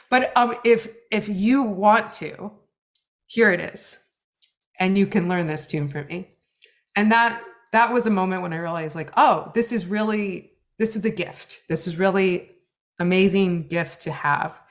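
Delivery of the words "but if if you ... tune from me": emotional, choked-up voice catching on the words. Recalling the words of a man who is no longer with us, choking up. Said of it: "I'm choking up a little bit".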